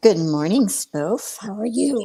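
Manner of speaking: frog-like croak in the throat. Speaker greets the other person good morning, froggy voice. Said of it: "that was some of my froggy voice coming through".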